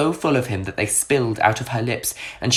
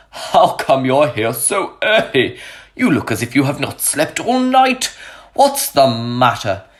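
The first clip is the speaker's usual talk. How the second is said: startled, surprised exclamation with rising pitch; 4 dB louder than usual. Narrator voices Friar Lawrence as Romeo races to him at first light: exclaiming. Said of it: "[name] raced to [name], a priest, and a good friend he had known all his life. / exclaimed [name]. / a priest".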